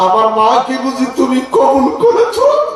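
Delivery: high, loud wailing cry, voice straining upward.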